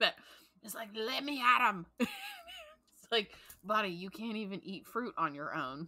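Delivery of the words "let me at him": high, loud put-on Scottish accent, little creature voice. Describing a little scottish fruit bat from a book they read: scottish fruit bat voice. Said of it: "got this little Scottish like fruit bat".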